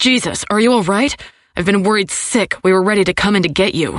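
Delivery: sharp bark, words tumbling out fast. Picking up on the first ring, he answers her call, barking rapid-fire. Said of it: "His voice barks in answer on the first ring. / The words come out rapid fire. / His outrage crackles through the line".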